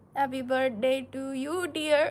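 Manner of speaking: Indian-accented speech. Wishing a boy who turned six a happy birthday: indian accent. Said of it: "say happy birthday in an Indian accent".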